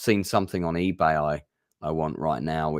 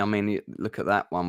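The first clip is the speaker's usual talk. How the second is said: ordinary talk, nothing marked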